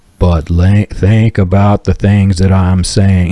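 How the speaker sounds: deliberate, slow, stretched-out preacher voice. Describing manipulative ministers, imitating one who starts talking really slow. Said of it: "starts talking really slow like this".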